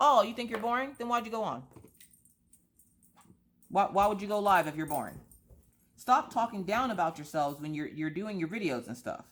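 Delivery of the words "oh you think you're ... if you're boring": tough, hard gangsta voice. Acting out replying in live chats: acting real gangsta. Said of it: "start being real gangsta in these live chats".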